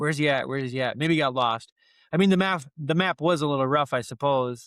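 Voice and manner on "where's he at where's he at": imitated panicking character voice. Retelling a film scene where a character waits at the docks: imitating a character panicking. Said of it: "he's sitting there panicking the whole time".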